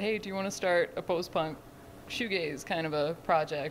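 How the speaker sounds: ordinary talk, nothing marked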